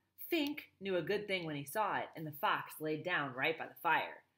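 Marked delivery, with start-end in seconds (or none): none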